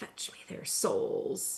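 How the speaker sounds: eerie, creepy, hushed whisper. Describing a video game he played, imitating a creepy game whisper. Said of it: "it's this really creepy voice and it whispers like".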